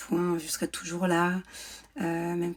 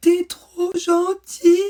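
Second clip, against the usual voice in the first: mock very high, loud gasping, choking sobs; 12 semitones higher, 13 dB louder than usual. Retelling what a crying boy said to the speaker, imitating gasping through sobs. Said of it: "Et il me dit en suffoquant".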